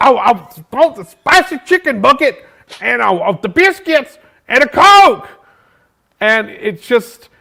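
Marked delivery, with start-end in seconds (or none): 0.0-5.3 put-on loud man voice, higher, louder. Retelling a man's drive-through order, imitating a loud man. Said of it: "he was very loud".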